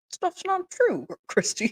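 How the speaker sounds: silly, funny dad voice, high and swooping. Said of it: "has that funny voice for her dad".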